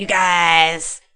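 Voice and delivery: loud lizard voice with guys stretched out. Retelling what Max said in the club: imitating Max's lizard voice. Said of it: "Fucking hate that lizard voice".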